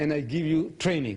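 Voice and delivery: ordinary talk, nothing marked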